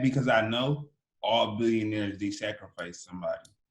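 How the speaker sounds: normal talking voice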